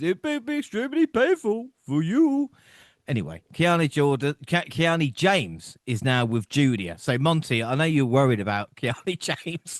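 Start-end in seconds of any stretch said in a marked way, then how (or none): 0.0-2.5 put-on masked-villain voice, pitched way up high. Talking wrestling, the speaker offers his best movie-villain line as a Bane impression. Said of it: "Probably the best one is".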